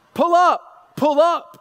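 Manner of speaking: high, loud, called-out English voice, like an autopilot.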